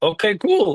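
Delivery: voice breaking into a very high squeak. Recounting a big-band take, speaker answers her question, retelling own voice crack. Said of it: "And then my voice cracks".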